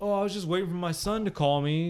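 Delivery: sarcastic, snide tone. Retelling what an irritated father said on the phone: imitating someone being sarcastic. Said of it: "just kinda sarcastically".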